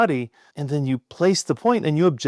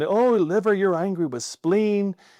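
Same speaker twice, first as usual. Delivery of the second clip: put-on flamboyant voice, higher; 6 semitones higher than usual. Retelling a practitioner palpating a patient: very flamboyant Eric imitation. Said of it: "very, very flamboyant".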